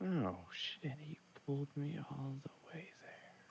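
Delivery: very soft, light whisper under the breath. Speaking in character near guards, hoping they won't hear: whispering under breath. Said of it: "I whisper this under my breath".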